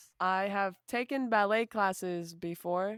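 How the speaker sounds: expressionless, flat, deadpan monotone. Stating a claim in a lies-and-truths game to the others, monotone poker face. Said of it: "Why do you say that so monotone?".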